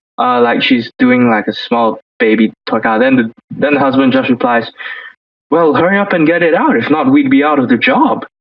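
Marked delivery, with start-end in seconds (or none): 5.5-8.3 sarcastic, snarky delivery. Retelling a husband's reply on a reality show: imitating a sarcastic reply. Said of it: "He is the most sarcastic motherfucker on the show".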